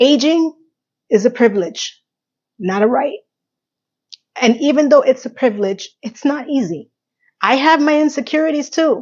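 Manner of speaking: choked-up crying, tearful, high, breaking voice. Thanking viewers as the show ends, admitting to tears: crying, voice breaking. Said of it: "yes, I am crying".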